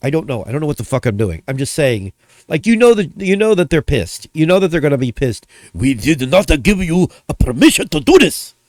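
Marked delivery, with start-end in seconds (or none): 5.7-8.5 bad, gruff, put-on Japanese businessman accent. Imagining a gruff Japanese businessman scolding someone, the speaker does a bad put-on Japanese accent. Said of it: "My accent is it's not great".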